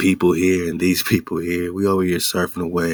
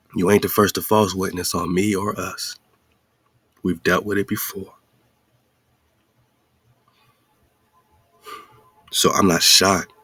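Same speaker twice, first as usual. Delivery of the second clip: speaking with passion. Answering someone who bore false witness against him, passionate voice. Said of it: "the passion in my voice right now".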